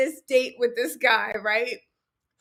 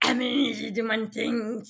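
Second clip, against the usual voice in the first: snake-like hissing voice; 2 semitones lower than usual. Mimicking a man who speaks as if in snake tongue, in a snake-tongue voice with added S's. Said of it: "putting S's on the end like he's speaking Slytherin".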